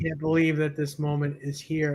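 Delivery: ordinary delivery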